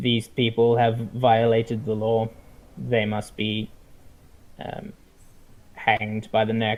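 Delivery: deep, almost machine-like synthetic voice, rattled off. Storyteller voices a figure in ornate plate mail, in a deep, almost synthetic voice. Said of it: "he speaks in a very uh, deep and almost um, um, almost synthetic type voice".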